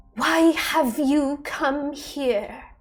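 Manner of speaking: very slow, jarring, discordant chorus of many voices. Voicing the thing at the group's center, many voices speaking as one, discordant. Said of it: "These many voices speak as one, a little discordant".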